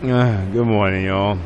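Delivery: groggy, sleepy voice of someone just woken. Host greeting viewers at the start of a daily game episode, still waking up. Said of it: "Sorry, I'm still waking up".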